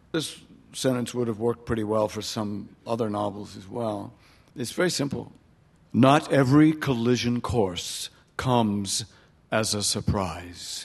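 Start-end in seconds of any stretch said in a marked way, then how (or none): 6.0-10.9 very slow, dramatic movie-trailer announcer voice. An author reads a sentence from the novel aloud, movie trailer voice. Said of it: "That even sounded like the voice of a trailer".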